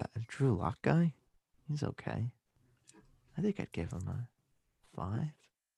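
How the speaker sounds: tired, stoned Denver voice, very soft. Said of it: "I could just sound tired and stoned".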